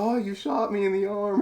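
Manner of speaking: very high, wounded, comedic yell. Retelling a movie scene, imitating Will Ferrell yelling after being shot. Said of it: "he's yelling it".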